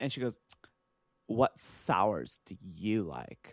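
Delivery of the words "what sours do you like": mock haughty show-off tone, very slow. Retelling a customer showing off for snooty friends: imitating a snooty customer. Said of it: "And she said it just like that".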